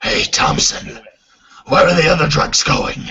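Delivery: spot-on dark superhero movie parody voice.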